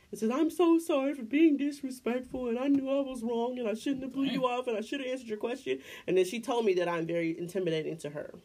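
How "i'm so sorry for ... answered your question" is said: mock crying and sobbing through every word. Retelling a 55-year-old woman's apology at work: imitating a crying apology. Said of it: "busts out crying, like snot tears".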